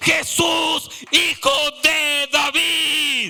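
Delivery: acted-out shout. A speaker retells a man shouting out to Jesus, retelling a shout. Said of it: "él gritó Jesús".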